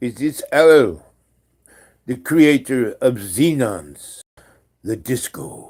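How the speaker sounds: put-on very loud European accent. Retelling a phone call from a stranger who asks for someone: put-on strange European accent. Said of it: "this voice with a kind of accent".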